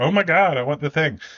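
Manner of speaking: put-on giddy, high, ten-year-old-like excitement. Podcast host plugging a sticker store, excited like a ten-year-old. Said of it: "I know I sound like a ten year old".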